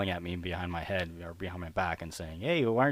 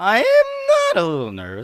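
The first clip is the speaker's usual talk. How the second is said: very high, loud, swooping put-on voice; 12 semitones higher, 9 dB louder than usual. A guest, asked by the host how they're feeling, answers in a high-pitched voice. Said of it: "I did the high pitched voice there".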